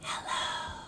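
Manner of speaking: whispered, very quiet, barely audible. In a bread-and-butter rhyme, saying hello as quietly as possible. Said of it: "Let's say hello as quietly as we can".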